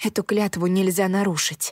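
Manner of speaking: plain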